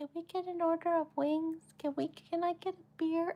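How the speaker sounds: meek, tiny, high mousy voice, barely audible. Retelling how a man ordered wings and beer at a crowded bar: mousy little voice. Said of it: "talking like a fucking mouse".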